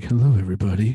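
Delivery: booming, very loud public-radio announcer voice. Joking about how they could open the show, going full NPR voice. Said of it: "I go to the full NPR and be like".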